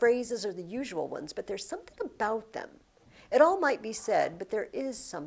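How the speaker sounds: plain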